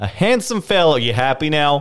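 tentative put-on Boston accent. Describing a character when asked, in a put-on Boston accent. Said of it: "I don't know if I can do a Boston accent".

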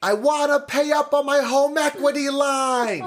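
very high yell, stretched long. Retelling a woman who screamed in the bank lobby every month, imitating her scream. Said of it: "she would just scream in the middle of the lobby".

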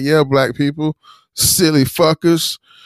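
mock heavy, scoffing sarcasm, high-pitched. Recounting what he said at the screen, retelling a sarcastic remark. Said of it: "he says it so sarcastically".

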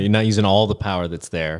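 normal talking voice

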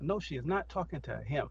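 ordinary talk

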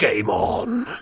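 mock muttering under breath. Retelling what a man said to himself as the wheels touched the tarmac, under his breath. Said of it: "I heard him under his breath say to himself".

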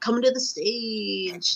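smooth, slow, stretched club emcee announcer voice. Speaker shows the voice they went with, a strip club announcer voice. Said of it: "I went with a strip club announcer".

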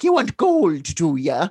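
slow, unhurried, drawn-out deliberate character voice. Retelling a scene from a Leprechaun movie: imitating the Leprechaun. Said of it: "and the leprechaun's like".

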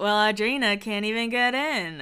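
cocky, self-satisfied little voice. Retelling a scene from The Hills, imitating Spencer's cocky voice. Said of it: "his little cocky voice".

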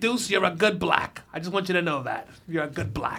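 put-on elderly woman's voice. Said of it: "She's like".

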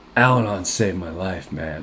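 acted dead-serious, very low, deep, grave tone. Retelling how the other speaker said it the other night: imitating someone being very serious. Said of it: "all serious, you're like".

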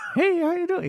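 very high, tiny little voice. Retelling a scene where a wrench talks: [name]'s little voice. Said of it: "[name] does the little voice".

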